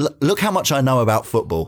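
ordinary talk

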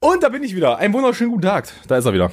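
winded, breathless, very high-pitched voice. Back again and greeting everyone while still out of breath. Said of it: "Bin noch etwas außer Atem".

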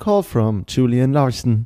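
slow, phone voice-assistant announcement style. Podcaster shows how the phone assistant would announce a caller: Siri voice. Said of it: "So würde dich wir meine Serie nämlich immer nennen".

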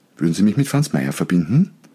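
voice rises at the end on verbinden. Contrasting a polite question with a command: pitch rises on verbinden. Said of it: "Stimme nach oben, Frage".

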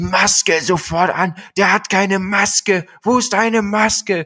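play-acted very high, flipped-out, furious screaming. Retelling a store employee yelling at them, the speaker imitates her shouting angrily. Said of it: "und schreit mich an, wirklich mit einem Ton".

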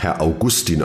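Augustin weighted on second syllable gus. Telling how a name was stressed, as Herr Peng did: stress on gus in Augustin. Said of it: "betone ich meinen Namen auf Guss, so wie Herr Peng das tat".

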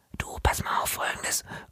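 very quiet, soft, unvoiced whisper.

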